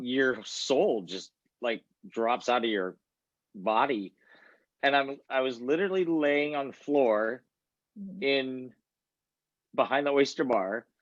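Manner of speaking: emotional, welling-up voice. Speaker telling a listener about a past moment, getting emotional. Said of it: "Sorry, getting emotional".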